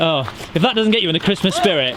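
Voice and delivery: ordinary talk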